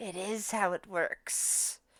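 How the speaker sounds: scary, frightening, breathy whispered voice. Voicing her as she stares at the dwarf over payment: scary voice. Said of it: "you hear a more scary voice coming from her".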